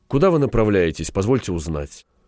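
ordinary delivery

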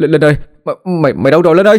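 high, stuttering, quavering, trembling call. A narrator reads a boy calling for his missing younger brother at night, stammering, trembling voice. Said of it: "lắp bắp cất giọng run run gọi".

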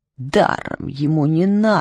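low muttering through clenched teeth. The mudaris repeats Bobo's words, muttering through his teeth. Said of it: "пробормотал мударис сквозь зубы".

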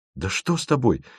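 astonished, amazed, surprised. A man reacts to a frightened companion who refuses to go on, astonished. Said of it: "поразился Тимофеев".

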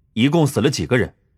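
ordinary delivery

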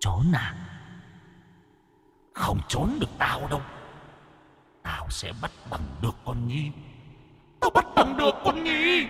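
high, swooping, hissing ghost voice. A narrator reads a ghost's line to the man it stares at, hissing. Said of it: "mà rít lên".

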